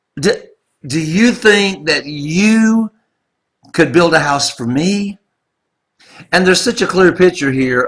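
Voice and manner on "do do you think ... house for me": heavy sarcasm with a drawn-out "you". Acting out God's words to David through Nathan: acting out a sarcastic tone. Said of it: "God uses sarcasm a little bit".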